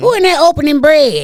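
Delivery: put-on high-pitched grandmother voice, calling out as from afar. Retelling how a nearly blind grandma heard bread opening: imitating grandma. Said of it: "She was like".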